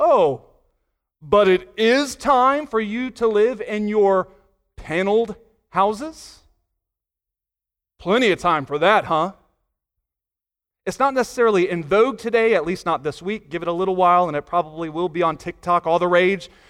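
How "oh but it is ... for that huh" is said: slow, dry, sarcastic, sardonic, play-acted. Speaker retells God's reply to the people, retelling a sardonic reply. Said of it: "God sardonically replies".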